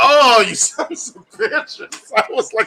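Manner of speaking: seething, furious outburst, very high and very slow. Retelling watching a movie's mid-credit scene: retelling own angry reaction. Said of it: "so angry".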